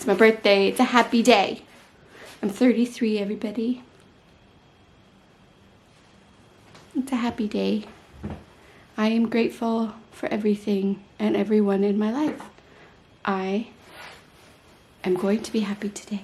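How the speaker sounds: voice fighting back tears. Sharing a bad day on her birthday with viewers, holding back tears. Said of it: "I really want to cry, but I'm trying very hard not to cry".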